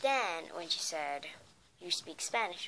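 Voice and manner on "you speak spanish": usual speaking voice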